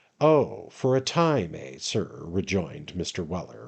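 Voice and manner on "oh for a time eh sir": slow, somewhat sarcastic tone. Reading a novel aloud, a servant answering his master: rather sarcastic. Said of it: "rather sarcastically".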